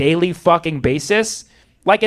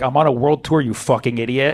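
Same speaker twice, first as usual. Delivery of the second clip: fed-up, annoyed, irritated tone; 5 semitones lower than usual. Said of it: "he was even annoyed just saying that".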